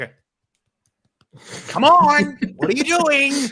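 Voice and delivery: high, loud yelling. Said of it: "you're just screaming at the T V".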